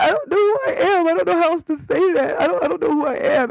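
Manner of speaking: acted-out sobbing, very high pitched and tearful. Retelling telling her father through tears: imitating her own childhood crying. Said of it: "And I'm crying".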